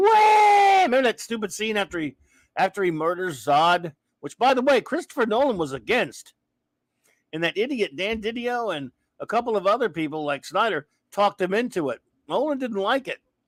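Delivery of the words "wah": high, loud, mock anguished wail. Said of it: "And then he got all".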